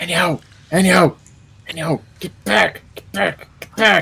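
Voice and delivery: soft, high mumbled voice. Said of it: "What are you mumbling about again?".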